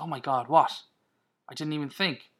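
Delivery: ordinary delivery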